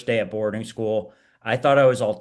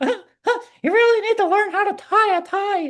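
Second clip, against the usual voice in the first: put-on child's voice, pitched very high; 4 dB louder than usual. Speaker retells what a kid named Billy said, imitating Billy's high voice. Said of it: "who had a high voice. And he'd be like".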